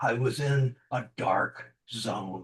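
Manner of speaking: very low, very slow and soft delivery. Showing a presenter how they said a line: lowered voice, slowed pace. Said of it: "You lowered your voice, you slowed your pace".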